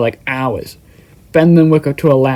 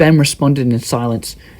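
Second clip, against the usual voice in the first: ordinary delivery, nothing marked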